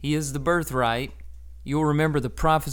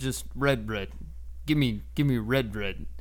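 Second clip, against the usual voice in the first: animal-like voice, lower and quieter; 3 semitones lower, 4 dB quieter than usual. Retelling Esau asking for the stew, in an animal-like Esau voice. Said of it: "he sounds kind of like an animal".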